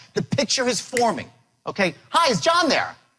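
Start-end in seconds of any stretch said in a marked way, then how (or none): 2.0-2.9 enthusiastic, excited, upbeat voice, pitched up. Demonstrating how to open a phone call asking for John, excited and upbeat. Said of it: "I'm excited, I'm upbeat".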